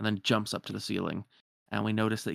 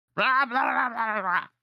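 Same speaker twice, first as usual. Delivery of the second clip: put-on angry creature noises; 13 semitones higher, 5 dB louder than usual. Narrating a scene aloud, doing the character's angry noises: mock-angry Stitch noises. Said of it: "he makes some angry noises".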